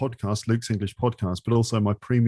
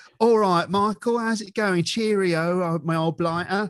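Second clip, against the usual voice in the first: odd put-on Cockney accent, a bit higher; 8 semitones higher than usual. Mocking how americans think british people speak, weird cockney accent. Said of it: "this sort of weird cockney".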